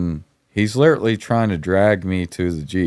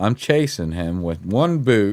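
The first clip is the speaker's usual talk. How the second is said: ordinary delivery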